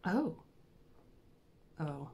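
soft, let-down little oh, disappointed. Hearing who the other man is, the speaker sounds disappointed. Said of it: "Why do you sound disappointed?".

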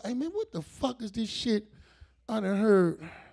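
very slow, lazy drawl, words stretched. Telling the audience about his friend, imitating Junebug's slow talk. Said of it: "Bug talks slow".

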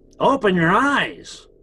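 joking put-on voice. Speaker retells a voice waking them up, in a funny joke voice. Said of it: "a funny voice, like a joke voice".

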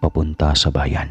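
plain

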